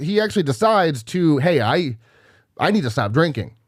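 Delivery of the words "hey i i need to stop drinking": usual speaking voice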